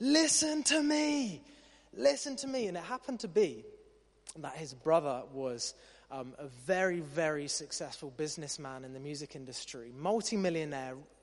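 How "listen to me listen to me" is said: very high, drawn-out shout at full voice. Retelling the math teacher the students pushed to the edge: retelling a shout at full voice. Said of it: "he just shouted at the top of his voice".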